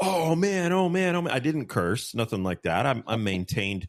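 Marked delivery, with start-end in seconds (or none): 0.0-1.3 play-acted, panicked, shrieked screaming, very high. Retelling the trailer slamming onto the truck: retelling own screaming. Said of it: "I start screaming".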